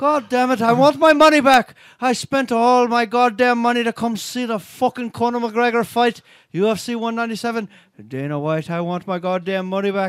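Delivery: clumsy, bad, fake put-on Irish accent. Complaining about wanting money back for a fight: bad put-on Irish accent. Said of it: "It was the accent".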